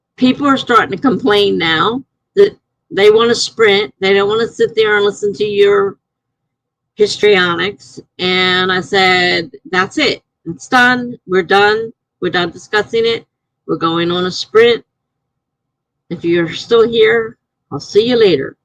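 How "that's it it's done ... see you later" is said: ordinary talk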